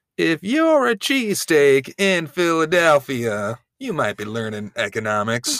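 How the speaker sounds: slow, high-pitched stand-up comedy joke cadence. Joking about an economics lesson in Jeff Foxworthy "you might be a redneck" cadence. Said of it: "Jeff Foxworthy, "You might be a redneck" cadence".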